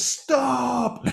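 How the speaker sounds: high, creaky, mock yelled cry.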